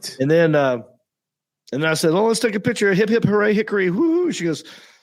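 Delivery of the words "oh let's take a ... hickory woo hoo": high, patronizing, condescending cheer. Retelling posing for a fan photo: imitating own condescending cheer. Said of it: "Don't be condescending".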